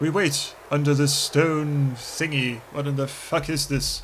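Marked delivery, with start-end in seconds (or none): 0.0-2.6 nature documentary narrator voice. Waiting hidden behind a pillar in a game: David Attenborough voice. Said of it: "In my best David Attenborough voice".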